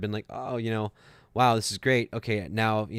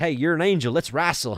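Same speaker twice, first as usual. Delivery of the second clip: put-on good old Southern accent, pitched up; 6 semitones higher, 5 dB louder than usual. Retelling what James said to him, imitating James's Southern accent. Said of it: "he's got this good old uh, Southern accent".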